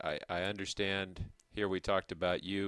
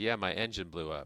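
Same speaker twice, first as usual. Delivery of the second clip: normal talking voice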